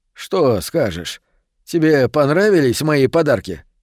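plain

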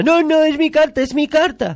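high, shrill, loud, very fake childish yell. Describing a film scene where a boy is shut outside: retelling a child's fake shout. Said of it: "grita con una voz falsa".

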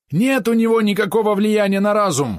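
shouting. In a story, a corrupt policeman argues with Osip, yelling. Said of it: "орал продажный полицейский".

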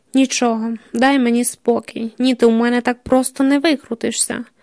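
ordinary delivery

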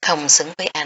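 ordinary delivery, nothing marked

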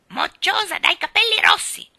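shrill, loud mocking squawk, swooping high. A parrot jeers at a red-haired girl: Ginger's croaking parrot voice. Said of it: "gracchiò Ginger, beffardo".

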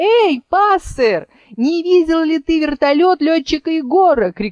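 high-pitched calling shout. Calling to a sparrow that just landed on a nearby tree, calling out. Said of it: "крикнула Чарус".

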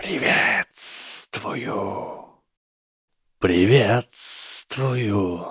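sibilant, hissing snake voice. Reading a story aloud, the snake greets Harry back in a hissing snake voice. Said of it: "прошипела змея".

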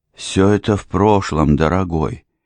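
hushed stage whisper. A woman interrupts her fiancé's confession, quietly half-whispering. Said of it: "тихо прошептала мисс Треттон".

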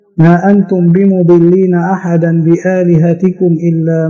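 ordinary delivery

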